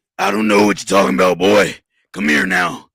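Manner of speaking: very loud, deep character voice, rising. Describing how they played a character, the speaker shows a dropped character voice. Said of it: "sometimes I would drop my voice like this".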